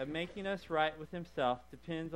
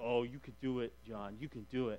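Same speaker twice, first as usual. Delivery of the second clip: quieter, mock-encouraging tone; 5 semitones lower, 7 dB quieter than usual. Retelling his best friend urging him on before his first roller coaster: imitating friend's encouragement. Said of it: "friend encouraging him at the roller coaster".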